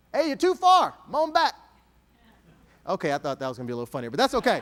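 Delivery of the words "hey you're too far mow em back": loud, pitched-up Texas accent and dialect. Showing how people from Texas say "yunt to": Texas accent. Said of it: "We use words like "moan back."".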